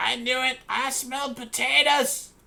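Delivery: very high, very loud, shrill, drawn-out dwarf voice. A game narrator voices the voice from down in the grate: attempted dwarven voice. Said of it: "I just cannot do a dwarven voice".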